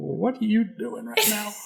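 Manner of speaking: incredulous, high, slow, creaky, drawn-out disbelief.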